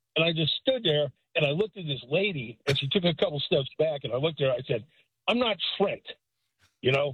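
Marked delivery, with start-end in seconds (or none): 5.2-6.0 angry, mad, irritated tone. Retelling a lady mistaking the speaker for trent, answering her: retelling saying it angrily. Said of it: "Why is Trent so mad at me?".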